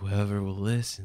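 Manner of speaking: undead voice. A player voices a character answering a fellow player, in a dead voice. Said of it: "Dead voice".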